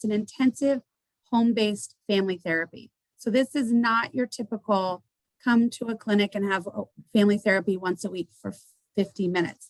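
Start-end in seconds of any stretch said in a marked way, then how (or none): 0.1-0.8 "intensive" stressed, said a bit higher. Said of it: "I'm gonna emphasize the word intensive".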